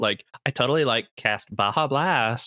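put-on Valley Girl accent, peppered with like. Asking about a Valley Girl accent, then trying it: Valley Girl accent. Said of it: "a Valley Girl accent?".

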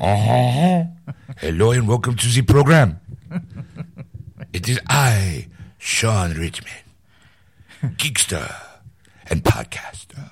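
terrible, very bad fake French accent. A podcast host welcoming listeners to the program, in the worst fake french accent. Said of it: "that is the worst French accent ever".

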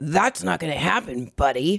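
put-on snotty man's voice. Correcting a retelling of a passenger's seat-recline refusal: imitating a snotty man. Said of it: "he was snot-y".

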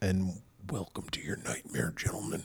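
very quiet, breathy whisper, barely voiced, close to mic. Welcoming the others to the show in a voice that sounded like Tobin Bell. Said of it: "That sounded more like fucking Tobin".

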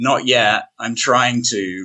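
slow, put-on bashful, sheepish voice. Answering a stranger who asks if you're a thru-hiker, with a sheepish reply. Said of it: "really sheepishly".

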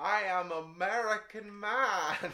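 put-on European accent trying for American. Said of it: "European trying to be American".

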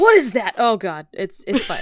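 a man's startled, swooping, horrified cry. Doing an impression of life as a man: imitating a horrified man. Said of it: "that's my impression of life as a man".

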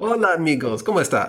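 Spanish-accent attempt. Challenged by another speaker to do a spanish accent, the speaker tries one. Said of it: "You should be able to do a Spanish accent".

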